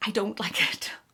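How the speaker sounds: guilty, hushed, breathy whisper. Giving an opinion on a handbag others like: whispering. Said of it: "I have to whisper that".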